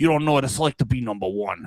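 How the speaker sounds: deep, low, tough mobster voice. Speaker drops a quick bit into the conversation, as a Tony Soprano impression. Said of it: "Just doing Tony Soprano".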